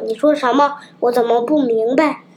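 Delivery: plain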